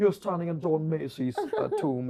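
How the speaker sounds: put-on very strong, heavy, swooping Scottish accent. Retelling what a spook trail guide at Edinburgh Castle said: very strong Scottish accent. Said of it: "speaking in a very strong Scottish accent".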